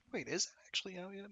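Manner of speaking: very high falsetto with the voice cracking. Talking about a spell that isn't ready, the speaker breaks into high falsetto. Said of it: "I had such a high fucking falsetto".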